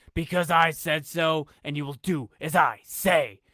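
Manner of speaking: slow, demonic-sounding voice. Narrating a segment idea, a man speaks into the camera in a deep, almost demonic voice. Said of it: "in a deep, almost demonic voice".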